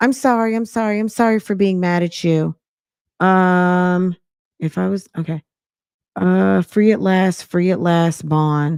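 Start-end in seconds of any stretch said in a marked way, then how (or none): 0.0-2.6 mocking passive-aggressive voice. Retelling how she apologized to him: imitating a passive-aggressive apology. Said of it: "she's so passive aggressive with her bullshit".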